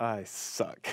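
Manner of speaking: muttering under breath. Retelling what a cyclist he passed said: imitating someone muttering under breath. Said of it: "I hear him say under his breath".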